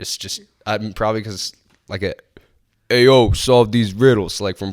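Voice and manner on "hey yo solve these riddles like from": put-on Brooklyn Italian accent, louder. Speaker imagining how riddles would sound, in a Brooklyn Italian guy accent. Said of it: "riddles would sound like an Italian guy".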